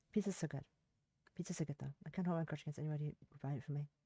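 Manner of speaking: put-on barely audible, soft, level, flat British accent. Speaker deliberately trying out a voice, quiet, soft, flat British accent. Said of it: "soft British accent in a flat tone".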